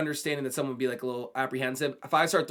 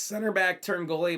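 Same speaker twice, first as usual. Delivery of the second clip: breaking voice, cracking mid-phrase; 3 semitones higher than usual. Reviewing a player card in a football game, voice cracking. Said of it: "My voice cracked there".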